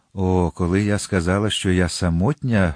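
plain reading voice

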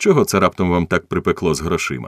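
ordinary delivery

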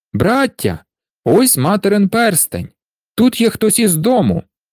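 joyful, glad, high-pitched exclamation. Narrator reading the eldest brother on finding their mother's ring, joyful exclamation. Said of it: "радісно вигукнув найстарший брат".

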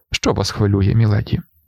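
ordinary delivery

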